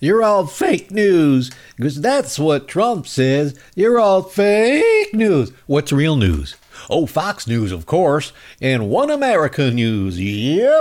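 mocking Southern accent. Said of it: "If they talk like this".

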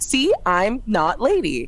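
mocking parody voice, as petty as possible. In a role-play scene, speaking as a petty mocking parody voice. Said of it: "like petty as I can".

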